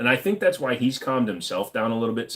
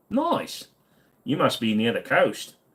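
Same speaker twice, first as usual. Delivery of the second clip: fake put-on Australian accent. Joking while answering questions: put-on Australian accent. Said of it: "I keep trying to do the accent".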